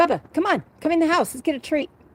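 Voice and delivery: high-pitched, loud yelling call. Speaker calling their dog to come into the house, yelling. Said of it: "Sorry if I'm yelling in your ears".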